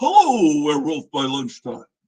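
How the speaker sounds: big booming voice with swooping pitch. Relaying Graphic Man's greeting to another participant, in his big booming voice. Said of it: "I have to do a big booming voice for him".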